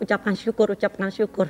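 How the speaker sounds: plain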